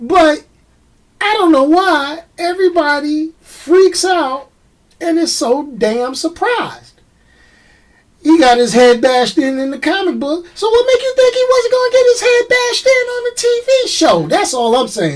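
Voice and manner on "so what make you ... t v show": squeaky-high voice, rushed and rattled off. Ranting, voice going high. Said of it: "Excuse me for getting a high voice".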